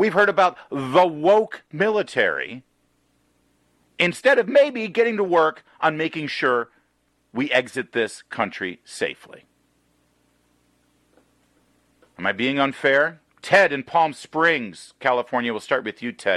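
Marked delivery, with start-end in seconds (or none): 0.0-13.2 a bit heated, somewhat agitated, worked up. Speaking to an audience before taking a caller, a little worked up. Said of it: "I'm a little worked up about this".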